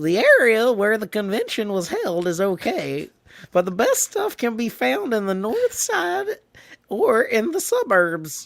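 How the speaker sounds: goofy put-on comic voice, high and swooping. Retelling what someone said, the speaker gives those words a funny voice for Dan. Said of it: "I'm gonna give Dan a a, a funny voice".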